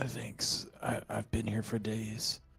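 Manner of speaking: very harsh, rough whisper. Game master voicing a character the players just unpinned from the ground, harsh whisper. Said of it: "in like a h- very harsh whisper".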